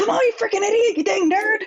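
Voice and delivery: very high-pitched yell. Speaker imitates Bakugo yelling at the speaker's husband: Bakugo impression, yelling. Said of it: "imitate Bakugo all the time and be like yell".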